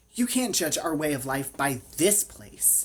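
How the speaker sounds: irritated. Narrator reading a character's retort, irritably. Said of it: "Emma said irritably".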